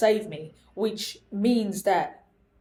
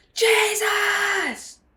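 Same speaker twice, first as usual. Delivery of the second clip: put-on very high, stretched-out cry; 13 semitones higher, 5 dB louder than usual. Retelling shouting out a name as hands let go: imitating own shout. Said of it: "two shouts of Jesus did come out".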